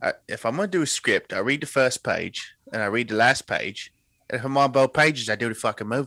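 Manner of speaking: put-on English actor voice. Doing a requested impression of an actor's quote: Michael Caine voice. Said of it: "[name], do your Michael Caine".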